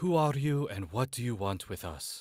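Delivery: loud calling out. Calling out in character to a cloaked figure: calling out loudly. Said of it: "calls out loud enough".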